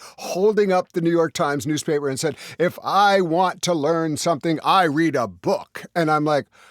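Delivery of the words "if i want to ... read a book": slow, sanctimonious, superior, self-righteous delivery. Retelling what an audience member said after a lecture: imitating a righteous audience member. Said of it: "standing up righteously".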